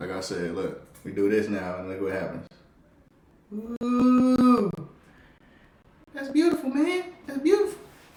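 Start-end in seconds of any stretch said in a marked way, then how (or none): 3.8-7.8 shrill, loud exclamation, long stretched "ooh", pitched high. Reacting to something on a video, Chris Tucker voice. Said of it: "That's my Chris Tucker voice".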